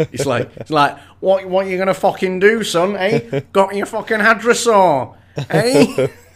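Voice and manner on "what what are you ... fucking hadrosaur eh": high, mouthy, jeering street scally voice. Voicing the young T-Rex as a mocking street scally: street scally voice. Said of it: "street scally material".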